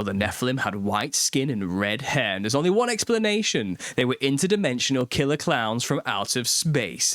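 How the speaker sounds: mock-dramatic, overdone delivery with big pitch swings.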